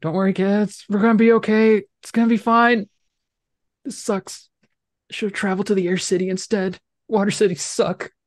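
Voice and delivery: high-pitched, scared, fearful voice. Game master voicing the turtle friend from inside its shell, frightened voice. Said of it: "you hear a very like frightened voice in the shell".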